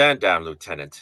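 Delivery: very firm, authoritative voice. Voicing a commander ordering a lieutenant to stand down: very authoritative voice. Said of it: "very authoritative voice".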